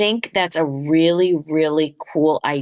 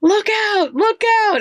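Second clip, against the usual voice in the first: very high, urgent, alarmed yell; 4 dB louder than usual. Acting out a spirit guide yelling a warning: imitating a spirit guide yelling. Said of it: "yelling at you".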